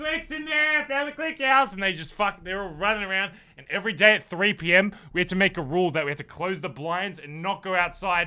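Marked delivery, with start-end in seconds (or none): 0.0-1.7 mock child screaming, much higher. Retelling the kids who found the house, imitating kids screaming. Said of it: "they're screaming".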